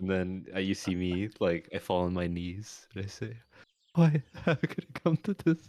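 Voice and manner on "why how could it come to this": speaking through giggles, pitched up. In a role-play, a player voices his kneeling character: laughing while talking. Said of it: "You're saying that while you're laughing".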